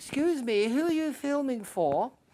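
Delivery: put-on very British accent, very high. Retelling what a lady at the royal visit asked: imitating a very British accent. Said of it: "a very British accent".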